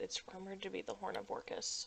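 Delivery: breathy, hushed whisper. Guild member explaining why they were sent to the Underdark, in a hushed voice. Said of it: "I kind of like hushed my voice a little bit".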